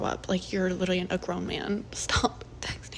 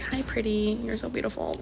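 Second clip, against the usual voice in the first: mock girly voice, higher pitch; 3 semitones higher than usual. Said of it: "when a guy talks like a girl".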